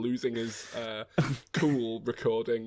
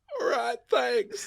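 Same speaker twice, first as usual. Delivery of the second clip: put-on stoned-sounding voice, very high-pitched and creaky; 13 semitones higher, 4 dB louder than usual. Joking with the others, doing a stoner Bill Clinton voice. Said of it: "It's turning into Stoner Bill".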